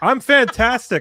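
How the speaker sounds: put-on shrill shout, very loud and very high-pitched. Telling how a woman on a trail asked if they were okay, retelling a really loud yell. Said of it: "I like yelled it really loud".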